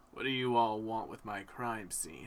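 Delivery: gruff, grizzled cop voice. Voicing a detective who confronts the players at a crime scene: grizzled detective voice. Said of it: "grizzled voice behind you that you hear".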